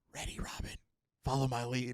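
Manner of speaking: quiet whispered voice. Retelling a scene from an episode, Batman whispers to Robin: Batman whispering. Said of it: "Batman whispers".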